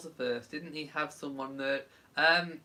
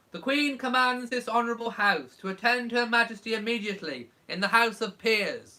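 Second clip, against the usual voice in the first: ceremonial, proclaiming announcer tone, pitched up; 7 semitones higher, 4 dB louder than usual. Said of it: "I'll do it in a more Blackrod voice".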